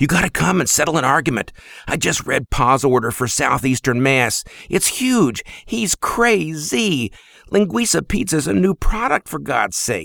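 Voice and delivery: gasping, out of breath. A younger brother urges his brother to settle an argument: gasping breathlessly. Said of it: "he gasped breathlessly".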